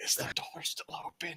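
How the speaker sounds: hushed, whispered voice. Repeating another player's in-character question to tease them: mock hushed tones. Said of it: "I say hushed tones".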